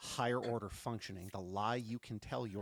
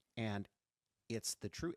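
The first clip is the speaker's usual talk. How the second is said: ordinary talk, nothing marked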